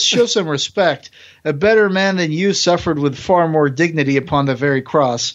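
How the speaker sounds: normal talking voice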